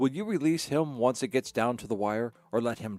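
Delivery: ordinary delivery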